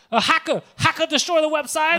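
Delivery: mock, very high, loud, frantic panicked cry. Retelling a phone call to a massage parlor: imitating a woman freaking out. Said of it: "she's freaking out".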